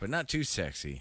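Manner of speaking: ordinary talk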